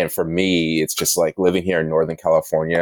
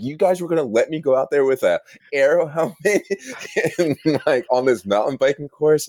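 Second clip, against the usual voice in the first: put-on, very high, indignant, angry shouting; 9 semitones higher than usual. Retelling yelling at the organizers about the course: imitating own angry yelling. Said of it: "yelling at them, being like".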